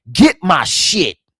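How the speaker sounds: mock blunt, aggressive, forceful manly voice. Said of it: "He roared".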